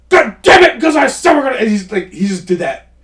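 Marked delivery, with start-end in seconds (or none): 0.1-1.5 very high, raised-voice yelling. Describing an actor's performance of raising his voice at people, imitating Ernest Borgnine yelling. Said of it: "just raised his voice at people".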